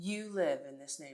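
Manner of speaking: play-acted scornful, doubting, sarcastic, rude disbelief. Retelling a man's reply to the speaker, imitating sarcastic, rude disbelief. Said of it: "Very sarcastically, very rudely".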